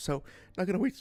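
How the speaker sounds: voice breaking, cracking up high mid-line. Introducing a game playthrough, with a voice crack. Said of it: "career-ending voice crack there".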